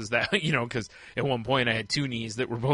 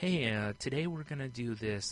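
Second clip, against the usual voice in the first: put-on gentle radio voice, quieter; 6 dB quieter than usual. Telling the other speaker how people on NPR sound, gentle NPR radio voice. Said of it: "it's just this really like gentle".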